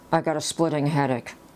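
ordinary talk, nothing marked

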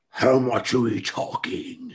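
character voice through gritted teeth. Narrating a game, voicing the Mind Flayer as it looks to you: through gritted teeth. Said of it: "smiles with gritted teeth and says".

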